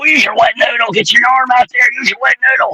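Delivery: little, high, hoarse put-on coach voice.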